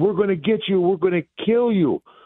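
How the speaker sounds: acted-out hollering like two men, high-pitched. Recounting hearing two men out on the dark dirt road, imitating men yelling. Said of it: "I can hear two men yelling".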